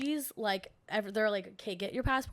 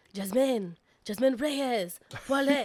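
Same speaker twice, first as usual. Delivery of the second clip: slow, loud, put-on French accent; 2 semitones higher, 6 dB louder than usual. Retelling a loudspeaker announcement at an airport gate: imitating a french accent. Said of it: "In their French accent".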